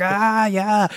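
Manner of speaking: high anime-style screaming.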